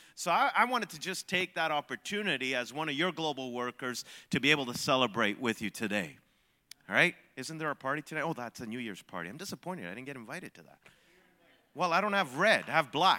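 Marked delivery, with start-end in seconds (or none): 9.3-10.8 very soft, quick, playfully disappointed teasing. Speaking to global coworkers at a celebration, teasing mock disappointment. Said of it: "I'm teasing you".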